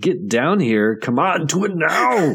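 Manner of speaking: worn-out, exasperated goading. Retelling a movie scene where Arnold is exhausted: imitating an exhausted Arnold. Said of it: "He's tired. He's at his wit's end. He's just like".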